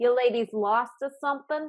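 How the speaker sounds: put-on heavy, hard-edged, rough Boston accent. A rough woman hunched behind a desk questions two ladies, in a thick Boston accent. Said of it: "thick Boston accent".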